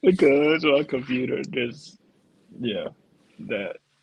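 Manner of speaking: laughing and giggling through the words while talking. Answering why the computer interrupted, laughing while talking. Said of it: "why are you laughing?".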